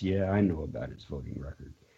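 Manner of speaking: put-on very soft, quiet, sheepish, ashamed tone. Acting out a woman's answer when asked about his voting record, imitating someone a little ashamed. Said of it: "with a little bit of shame in her voice".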